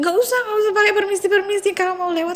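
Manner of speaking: high, fast, protesting voice.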